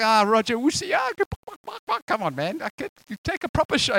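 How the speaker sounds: playful put-on teasing. Retelling teasing a shooter while saving goals, retelling a teasing taunt. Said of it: "I was just teasing him".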